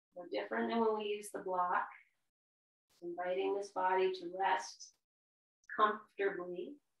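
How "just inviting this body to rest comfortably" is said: very slow, unhurried, drawn-out delivery. Guiding listeners to rest comfortably in a pose, said really slow. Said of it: "I say it like that really slow".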